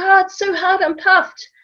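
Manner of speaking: put-on very high, complaining little-kid voice. Retelling how a little child on a park run complained, imitating a child complaining. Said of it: "he's like".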